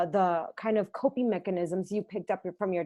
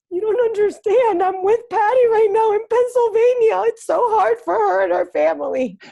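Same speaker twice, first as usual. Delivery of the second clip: put-on, very high, very loud, tearful crying wail; 13 semitones higher, 10 dB louder than usual. Retelling answering her mom, who asked why she was crying: imitating herself crying. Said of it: "Why are you crying?".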